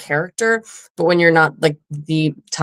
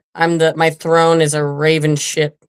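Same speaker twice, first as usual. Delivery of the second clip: ordinary delivery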